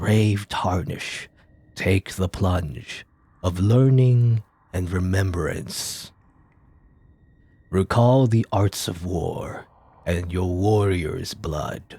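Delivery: slow, drawn-out spectral ghost voice. Playing a game, the speaker voices a ghost that has no voice, in a ghost voice. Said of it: "I'll just do the voice acting, you know, for the ghost thing".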